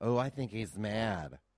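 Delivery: slow, teasing, put-on lisping voice.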